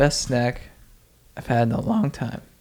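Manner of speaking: voice cracking. Describing a favorite snack with excitement: voice cracking. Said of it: "my voice just cracked when I was talking".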